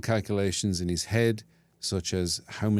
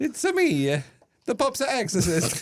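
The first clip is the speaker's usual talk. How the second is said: put-on, very high, swooping Italian accent. Joking about a film, Mario-style Italian accent. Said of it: "He took the Italian accent".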